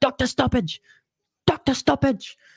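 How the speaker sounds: bad put-on Irish accent, very high pitched. A host greeting a viewer about a fight's ending, in a terrible irish accent. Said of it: "Terrible Irish accent".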